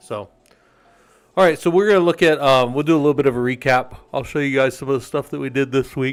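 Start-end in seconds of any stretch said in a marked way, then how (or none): 4.1-6.1 words spoken through a yawn. Speaker previewing a recap of the week's work for the group, yawning while talking. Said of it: "sorry, I'm yawning".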